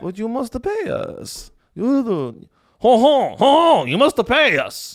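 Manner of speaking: put-on French accent. Acting out a woman demanding to be paid, in a French accent. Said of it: "like French".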